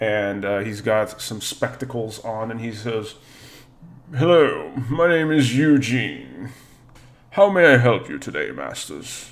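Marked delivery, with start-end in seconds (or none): 4.1-9.3 animated butler voice with a swooping tune. Narrator voices the head butler greeting the players, as Eugene the head butler voice. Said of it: "the head butler sort of approaches you".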